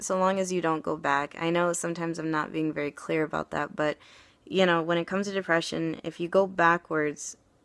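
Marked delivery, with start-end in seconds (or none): none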